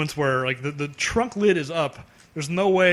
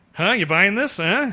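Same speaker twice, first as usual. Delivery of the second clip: mock needling, daring, goading taunt; 3 semitones higher than usual. Imitating how a character said a line in a movie: taunting "huh". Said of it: "the way she says, "Huh?"".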